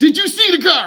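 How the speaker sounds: very high-pitched, loud screaming. Contrasting a calm parent, the speaker acts out someone screaming at a driver: imitating someone screaming. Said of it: "Instead of someone screaming at you".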